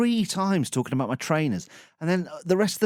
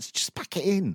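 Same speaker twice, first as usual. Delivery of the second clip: ordinary talk, nothing marked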